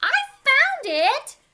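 loud, high-pitched squeak. Narrator reading a kitten's line in a story, squeaking as Dottie. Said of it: "Dottie squeaked".

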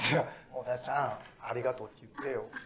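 soft, low-voiced murmur.

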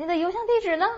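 final 呢 said with a rising tone. Showing a statement used as a question, rising tone on final 呢. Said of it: "你的邮箱地址直接语气一上升".

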